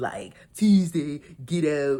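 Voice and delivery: put-on Baltimore accent. Recapping a new season's cast, speaker echoes their words in a Baltimore accent. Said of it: "these Baltimore accents are going to ruin me".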